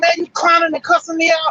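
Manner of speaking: shouting. Retelling a quarrel, the man answering the woman: imitating a man yelling back. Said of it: "he started yelling back".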